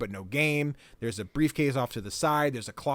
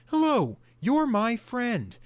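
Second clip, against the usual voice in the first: awkward put-on character voice, higher and louder; 10 semitones higher, 5 dB louder than usual. Describing a game's talking head character, Benny: awkward Benny voice. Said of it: "who's this really awkward".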